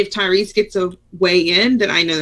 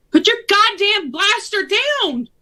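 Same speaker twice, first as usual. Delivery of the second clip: barked, very high-pitched yelling; 14 semitones higher than usual. A player's character yells at people shooting at the group, yelling a command. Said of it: "I want to yell out at them".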